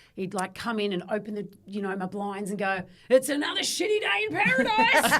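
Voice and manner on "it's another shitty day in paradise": imitated excited tone, higher and louder. Retelling Dad waking them up with the blinds: imitating Dad's excitement. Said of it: "Dad was just so excited to be there".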